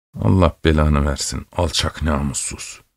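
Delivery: low, quiet mutter under the breath. A soldier, ignored by a silent man he asked for bread, mutters under his moustache. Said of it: "bıyıkları arasından söylemişti".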